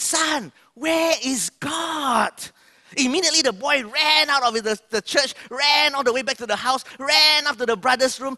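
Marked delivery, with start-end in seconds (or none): 0.0-2.3 raised, high-pitched, very slow voice. Telling the story, the speaker voices the pastor repeating his question to the boy: retelling a raised voice. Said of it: "The pastor raised his voice".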